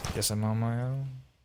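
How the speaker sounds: put-on bored delivery. Imitating a reel's voiceover to its maker: imitating a bored delivery. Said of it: "And you sound bored".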